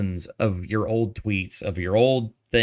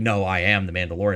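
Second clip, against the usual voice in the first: put-on angry, pissed-off tone. Retelling an actor's reply on being called a voice actor: imitating someone pissed off. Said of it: "pissed off".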